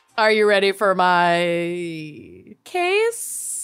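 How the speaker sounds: uncertain, hesitant tone. After the ad read, opening the next bit to the other speaker, unsure. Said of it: "you sounded unsure about even asking that question".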